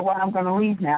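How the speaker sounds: ordinary delivery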